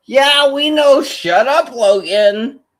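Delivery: deliberately irritating, loud, high blurted voice. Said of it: "purposely going to be loud and annoying".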